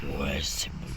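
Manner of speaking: slightly weird, deep whispered voice.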